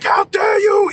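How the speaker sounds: mock very high, furious shouting outburst. Retelling a friend's reply to the accuser: imitating a friend flipping out. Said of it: "he started flipping out".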